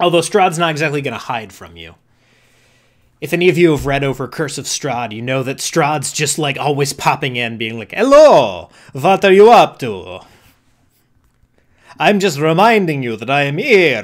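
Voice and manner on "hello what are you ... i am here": loud, campy cartoon vampire voice. Acting out the vampire Strahd always popping in: Count von Count voice. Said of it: "I don't know why I made Strahd Count von Count".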